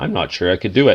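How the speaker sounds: plain reading voice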